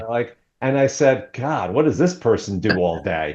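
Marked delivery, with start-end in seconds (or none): 1.3-3.3 play-acted scoffing, sarcastic, mocking tone. Recalling a story about someone's pampered routine, retelling a sarcastic remark. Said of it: "I was just kind of being sarcastic".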